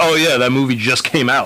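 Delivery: plain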